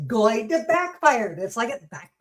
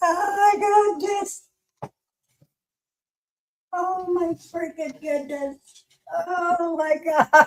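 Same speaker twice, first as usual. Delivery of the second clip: talking through laughter, higher pitch; 6 semitones higher than usual. Reacting to a game moment, laughing while talking. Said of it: "I still can't stop laughing".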